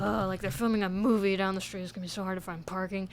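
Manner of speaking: low grumbling mutter under the breath. Recalling an employee moving his car, imitating him muttering and grumbling. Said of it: "muttering under his breath and like grumbling".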